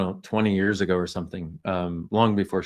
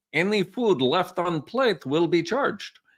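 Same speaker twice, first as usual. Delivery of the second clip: bad fake Polish accent, pitched up; 11 semitones higher than usual. Reading out a sign seen in Chicago's Little Warsaw district: terrible Polish accent. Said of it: "I do realize that's a terrible Polish accent".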